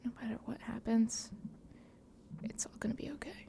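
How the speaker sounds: hushed, very quiet, breathy whisper, barely voiced. Reassuring Mavis during a tense scene, whispering in character. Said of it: "kinda whisper".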